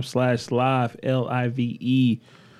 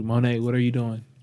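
plain

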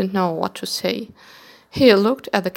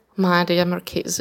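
plain

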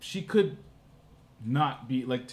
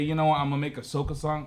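ordinary talk

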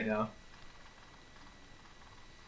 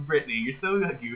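ordinary delivery

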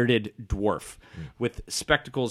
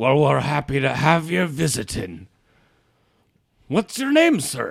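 put-on swooping fantasy dwarf character voice; 3 semitones higher than usual. Voicing a kindly gray-bearded dwarf greeting visitors: dwarf tinkerer character voice. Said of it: "He says".

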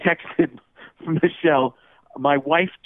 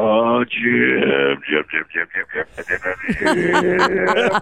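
slow, swooping, drawn-out voice revving like an engine; 3 semitones lower than usual. Revving up the impression of the commentator: Tony Romo impression. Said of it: "revving up the Tony Romo car".

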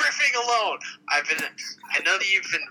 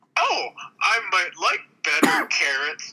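talking-horse character voice. In an improv scene, the horse answers someone offering carrots, in a horse voice. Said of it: "This is a horse voice".

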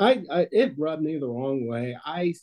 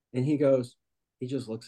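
ordinary delivery

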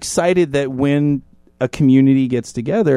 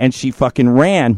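ordinary talk

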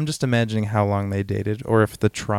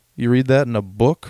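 mock insulting tone, louder; 5 dB louder than usual. Retelling a story, quoting one of the cops, imitating an insulting tone. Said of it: "in, like, this insulting tone".

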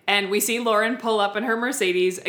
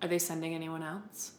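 put-on sad voice, much quieter; 4 semitones lower, 13 dB quieter than usual. Recapping an episode, acting out Lauren asking Whitney a question, mock-sad, barely getting words out. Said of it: "she's so sad she can hardly get the words out".

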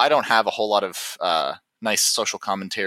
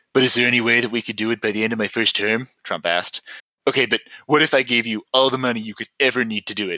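rough, borrowed put-on voice. Reading a quote from Trump aloud, attempting a Trump voice. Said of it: "let me try and do a Trump voice".

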